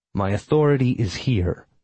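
plain

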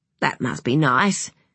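ordinary delivery

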